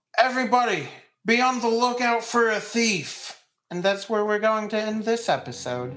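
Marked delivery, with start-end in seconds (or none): 0.2-3.4 loud alarmed yell calling out. Voicing someone in the town warning everybody about a thief: yelling. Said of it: "somebody yells out".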